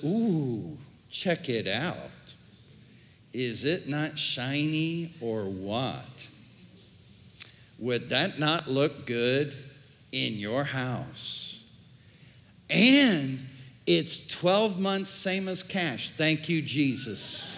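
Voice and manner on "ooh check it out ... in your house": enticing, coaxing tempter's voice. Acting out the devil tempting someone about finances: voice of the devil. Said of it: "the devil says".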